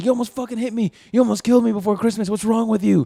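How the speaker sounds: mock high-pitched, threatening, intimidating yell. Retelling how a man yelled at a driver who nearly hit him: imitating someone yelling. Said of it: "he's just yelling at her".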